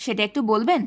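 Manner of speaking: ordinary delivery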